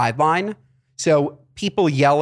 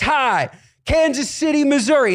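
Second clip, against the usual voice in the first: mock yelling, much higher, slower; 11 semitones higher, 3 dB louder than usual. Recalling a diehard Chiefs fan behind them at a game, imitating her yelling. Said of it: "she kept yelling".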